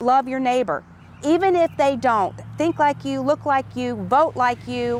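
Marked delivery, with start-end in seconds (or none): none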